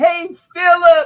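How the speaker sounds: very high, shrill, loud calling yell. Retelling how someone shouted a coach's first name: imitating someone yelling. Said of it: "John Arnaud yells".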